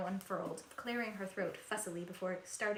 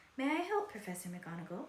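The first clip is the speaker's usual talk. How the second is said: sickly sweet, falsely polite, poisonous tone. Narrating a professor offering help to another professor, poisonously sweet voice. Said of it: "in her most poisonously sweet voice".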